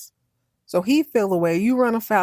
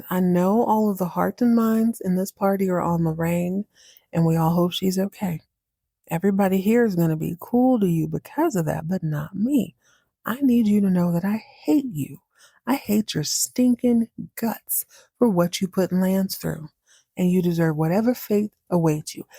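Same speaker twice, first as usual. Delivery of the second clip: put-on forced calm, calmest possible voice. Retelling a man's words to another guest at the party, retelling calmest possible voice. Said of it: "in the calmest voice he can muster".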